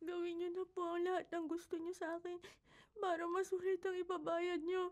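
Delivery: very quiet, hushed, tearful, weeping crying voice. In a motel room, a woman told she is crying answers her paying client, tearful, crying. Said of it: "Pero umiiyak ka".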